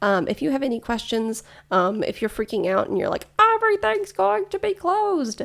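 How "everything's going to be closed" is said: very high, freaked-out frog puppet voice. Imitating a listener freaking out about closures: Kermit the Frog voice. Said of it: "Kermit might be listening".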